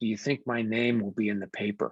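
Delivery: secretive, confiding, hushed conspiratorial stage whisper. Retelling how a humble woman leaned over to ask a question, imitating a conspiratorial half-whisper. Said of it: "in a very conspiratorial whisper said".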